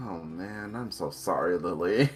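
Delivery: muttering, mumbled and dejected. Voicing a dejected character apologizing: muttering dejectedly. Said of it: "he kinda just mutters".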